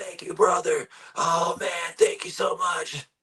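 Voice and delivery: raspy voice, very high pitched. Retelling carrying a man's bass over to him, the speaker imitates his raspy reply. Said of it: "he gets in his raspy".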